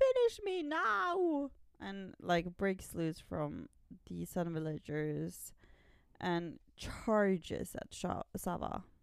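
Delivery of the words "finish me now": high, slow, furious and angry cry. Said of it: "Kavi gets really mad".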